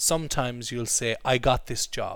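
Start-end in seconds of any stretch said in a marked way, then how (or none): none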